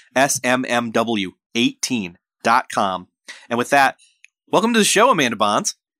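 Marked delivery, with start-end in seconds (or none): 0.1-3.0 said at a slower pace. Host repeating a web address for listeners, said slower. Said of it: "I got to say it slower".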